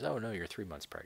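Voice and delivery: ordinary talk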